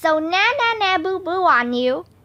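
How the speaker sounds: usual speaking voice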